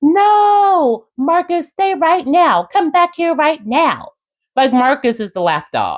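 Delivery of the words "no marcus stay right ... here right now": very high yell, stretching the no. Retelling an event, acting out Angela calling someone back; imitating Angela yelling. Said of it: "Then Angela starts yelling".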